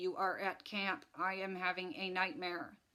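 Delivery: mechanical, droning, flat monotone robot voice. Woken from a nightmare by his sister, a brother answers her in his robot voice. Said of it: "he said in his robot voice".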